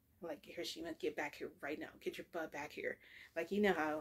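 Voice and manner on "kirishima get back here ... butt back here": mock stern scolding tone. Retelling calling a running child back: imitating a stern mom voice. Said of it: "that voice that makes you go, "Oh, crap, I better stop running."".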